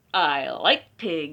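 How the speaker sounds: hostile, menacing tone. Reading a story aloud, the wolf arriving at a straw house speaks: not friendly. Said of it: "in a not friendly way".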